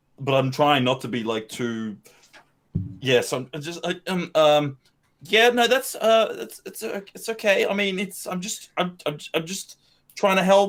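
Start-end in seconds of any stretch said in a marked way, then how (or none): 5.2-10.7 awkward, flustered stammering, higher. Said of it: "like, very awkwardly".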